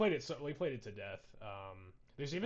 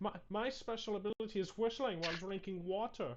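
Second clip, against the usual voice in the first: very high-pitched, accented cartoon pig voice; 9 semitones higher than usual. Retelling what a cartoon pig says in a game: Three Little Pigs accent voice. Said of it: "one of the three little pigs from the movie with the accent".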